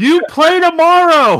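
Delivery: shrill, very high, loud yelling. Retelling yelling across the court during a game: imitating own yell. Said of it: "I'm yelling across the court".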